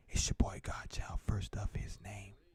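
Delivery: soft, breathy, whispered ASMR delivery. Offering to do the rest of the show ASMR style, soft ASMR-style voice. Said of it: "if I did the rest of the show like this? A little A S M R style".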